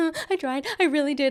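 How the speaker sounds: shaky, teary voice on the edge of tears. Mocking a woman whose bullshit is being called out, imitating a shaky crying voice. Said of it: "Like she's crying".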